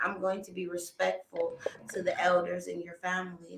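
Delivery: soft, unvoiced whisper.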